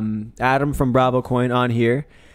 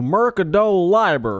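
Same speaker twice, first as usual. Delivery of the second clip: put-on Texan pronunciation, pitched up; 6 semitones higher than usual. Re-pronouncing mercado libre for the others: texan accent. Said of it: "I'm gonna pronounce that in Texan for you".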